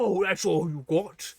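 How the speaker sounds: loud, slow, goading put-on British accent. Describing a game's punchable clay face that insults weak punches, mock-taunting british accent. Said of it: "he has a British accent".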